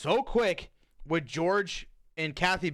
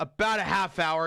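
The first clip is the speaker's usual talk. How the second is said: play-acted dismissive, rude, snide, jerk-like tone. Retelling a movie scene, answering the real estate lady: imitating George, rude. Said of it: "he says it like a dick".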